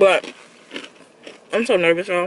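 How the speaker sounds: talking while chewing. Speaking to viewers while eating pretzels, talking while chewing. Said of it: "I'm sorry for chewing".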